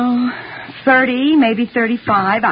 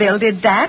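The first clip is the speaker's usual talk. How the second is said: plain reading voice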